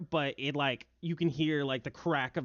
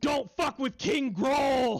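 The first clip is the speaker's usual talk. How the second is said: very high, loud, chest-puffed, boastful bugbear monster voice; 11 semitones higher, 5 dB louder than usual. Voicing a bugbear who stands up and puffs his chest out: chest-puffed bugbear voice. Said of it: "The bugbear stands up and, like, puffs his chest out. He's like".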